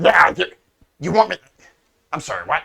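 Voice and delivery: confused, non-native, lost-sounding speech. Game master voicing a charmed character answering a command: non-native Common speaker voice. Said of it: "common is not his first language".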